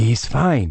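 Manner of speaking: hushed, whispering voice. Reading a story aloud, the narrator hiding during a phone call: whispering. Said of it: "I whispered".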